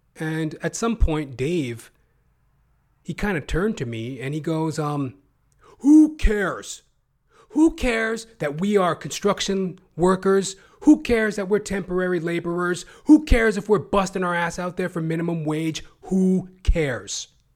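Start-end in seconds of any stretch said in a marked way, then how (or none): 5.8-17.3 loud, high, acted-out furious, snapping angry rant. Retelling how a buddy turned and snapped at him: imitating a buddy snapping angrily. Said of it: "snapped on me".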